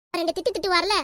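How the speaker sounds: plain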